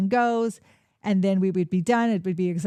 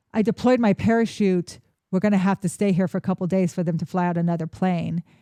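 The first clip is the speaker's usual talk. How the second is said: normal talking voice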